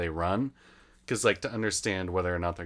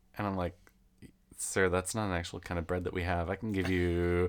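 ordinary talk

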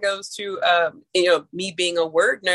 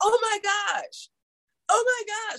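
overwhelmed-sounding voice. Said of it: "I'm like".

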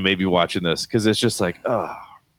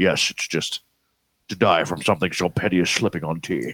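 put-on Scottish accent, pitched lower; 6 semitones lower, 3 dB quieter than usual. Retelling a scene from the movie: Sean Connery impression. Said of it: "He's like".

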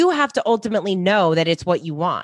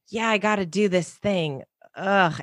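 put-on unexcited, reluctant tone; 4 dB quieter than usual. Retelling a group member's words about her goal: imitating someone sounding unexcited. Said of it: "she was so not excited about it".

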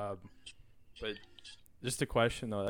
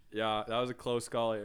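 normal talking voice

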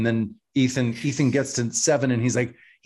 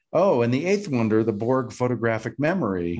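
normal talking voice

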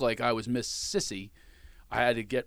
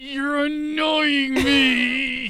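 very high voice, spoken through clenched teeth; 14 semitones higher, 8 dB louder than usual. Retelling what his wife said to him, imitating speaking through gritted teeth. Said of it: "She gritted her teeth and said".

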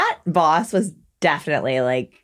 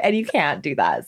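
ordinary delivery

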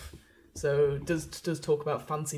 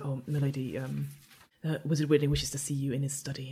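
hushed whisper. A servant comes in with a message for the lady, whispering servant. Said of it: "sort of comes in and sort of whispers".

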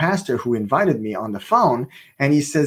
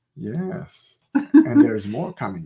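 put-on calm voice; 2 semitones higher than usual. Retelling a phone call, imitating someone calm. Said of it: "She's always calm".

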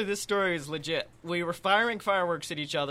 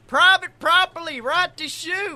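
mock shrill holler, very high, loud, distant; 11 semitones higher, 5 dB louder than usual. Retelling a warning someone yelled in the woods: imitating someone yelling. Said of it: "I heard someone yell".

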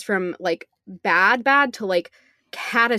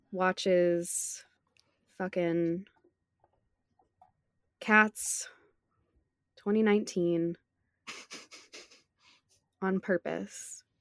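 sad, much quieter; 9 dB quieter than usual. A podcast host introduces the show to listeners, sounding sad. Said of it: "You sound so sad".

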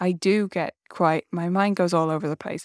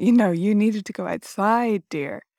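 mock condescending, patronizing, superior, talking-down tone; 3 semitones higher than usual. Addressing yourself in your most patronizing voice: mock-patronizing tone. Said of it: "in my most patronizing voice to myself".

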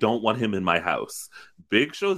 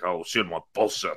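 imitated drunken mumble, lower; 4 semitones lower than usual. Recapping a scene, voicing a man who drank two bottles of wine: imitating drunk mumbling. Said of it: "he is truly mumbling".

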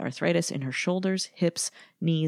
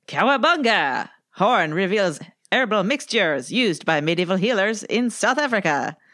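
loud, clumsy put-on French accent; 3 semitones higher, 5 dB louder than usual. Asked to read a silly headline aloud, the speaker tries a French accent. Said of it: "do i read it with a french accent".

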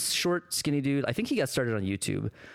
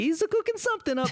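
generic cartoonish Italian accent, higher pitch. Doing an impression of the Pope, as Family Guy does it: Family Guy Pope voice. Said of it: "what I'm actually doing is Family Guy Pope".

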